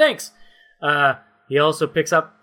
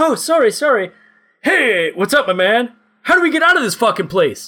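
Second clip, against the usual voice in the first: chummy, friendly voice pitched up; 6 semitones higher, 3 dB louder than usual. Voicing a character who almost collides with the players: Jason Momoa impression. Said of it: "That's my best Jason Momoa expression".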